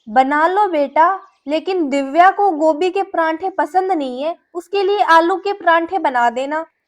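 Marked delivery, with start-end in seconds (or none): none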